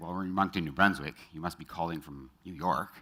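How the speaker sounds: normal talking voice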